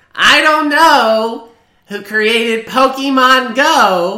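shrill, very loud, very high, slow, long stretched "go". Showing how the impression should sound: shrill Hillary Clinton impression. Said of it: "She has a shrill voice".

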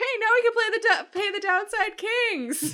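loud, very high pitch. After the group receives credits, a character speaks up in a loud voice. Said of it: "He says in a loud voice".

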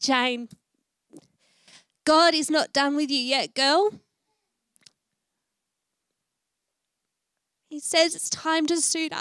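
trembling, wavering, crying, tearful voice. Speaker prays aloud for Jane and admits they knew they would cry, wavering voice. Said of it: "but it's all wavering".

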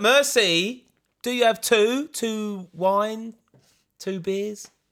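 slow speech with a slight twangy accent. Showing the English thing of ordering in France, slow speech with a little twang. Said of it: "talk really slowly and then put a little twang on your accent".

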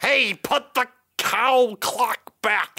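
very high, otherworldly alien creature voice. In a storytelling game, the narrator speaks as an alien to the player: alien voice. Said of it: "That was an alien talking to you".

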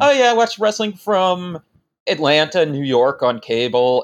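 ordinary talk, nothing marked

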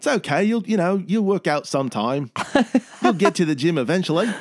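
cheerful put-on Australian accent. Showing off a new inner monologue voice, as a happy little aussie. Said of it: "Like just this happy little Aussie".

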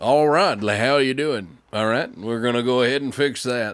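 sexy, rough backwoods guy voice. Describing Plumber Joe, doing Plumber Joe's backwoods guy voice. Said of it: "the sexy fucking backwoods guy voice".

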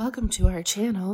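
ASMR-style voice. An art teacher greeting viewers of a video channel, in an ASMR voice. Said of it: "This is my ASMR voice".

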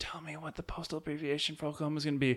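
very soft, faint, hushed, fading last-breath voice. Acting out a dying lady's last wish: voice of a dying woman. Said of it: "with her dying wish".

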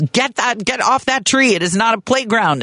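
acted-out, high-pitched shooing yell. Retelling yelling at the neighbors' kids swinging on a tree: retelling own past yelling. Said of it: "I'm yelling at the kids".

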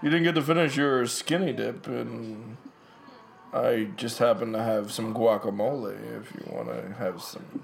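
put-on creepy guy voice. Dubbing lines for a creepy dude in a movie: put-on creepy dude voice. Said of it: "He's clearly doing a voice".

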